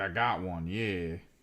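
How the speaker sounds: slow, thrilled, excited security guard voice. Retelling a security guard who spots an old badge: imitating an excited guard. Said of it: "He was so excited".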